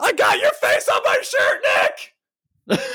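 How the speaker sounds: put-on very high, frantic, crazed calling out. Retelling calling out to a celebrity leaving a car: retelling screaming at the top of lungs. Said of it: "Screaming at the top of my lungs".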